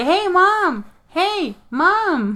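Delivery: put-on little kid hollering, very high and very slow. Retelling a movie screening, speaker mimics a kid in the theater: imitating a little kid calling out. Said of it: "he's just like".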